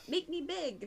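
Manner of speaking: very high, shrill, loud shouted call. Voicing a character calling out to Raven while flying: yelling. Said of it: "yells out to Raven".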